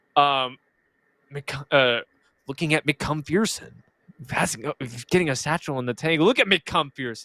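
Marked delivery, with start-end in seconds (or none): 2.4-7.2 imitated, put-on smooth voice. Speaker imitates a streamer commentating a game, in a smooth voice. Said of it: "he's got that like smooth voice".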